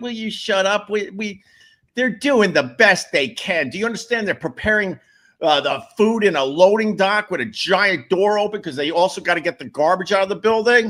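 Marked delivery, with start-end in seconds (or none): 0.0-0.9 mock exasperated, fed-up, annoyed tone. Talking to Ron, the speaker retells their own reply to complainers. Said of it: "I'm like".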